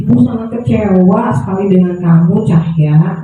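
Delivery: tender, gentle reproach, guilt-laden and disappointed. Acting out a guilt-tripping mother scolding Cahya: soft, gentle voice. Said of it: "Ini suaranya lebih lembut".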